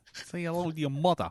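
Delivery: trying a Boston accent. Hosts joking before getting to the film, trying out a Boston accent. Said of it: "We're already trying the Boston accents".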